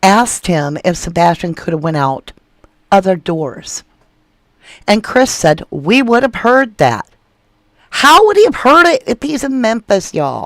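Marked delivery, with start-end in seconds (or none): 7.9-10.5 high-pitched shouting yell. Addressing listeners about a witness's interview claim, the speaker is yelling. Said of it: "I'm sorry for yelling".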